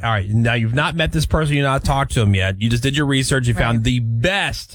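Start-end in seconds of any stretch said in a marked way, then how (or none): none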